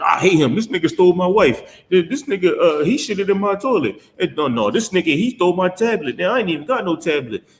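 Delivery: high, aggrieved, squabbling griping. Acting out the people bringing their quarrels to Moses: imitating complaining Israelites. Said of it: "ten thousand knuckleheads that just came out of Egypt".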